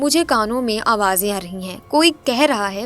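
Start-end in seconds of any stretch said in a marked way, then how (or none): none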